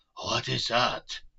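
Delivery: loud, rough, raspy, hoarse voice. Reading a line Van Helsing asks in a hoarse voice: hoarse voice. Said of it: "That's a hoarse voice".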